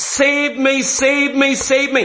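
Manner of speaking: acted loud crying, man's voice. Speaking of a man who cannot see, speaker acts out his words, acting out a loud cry. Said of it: "He is crying aloud".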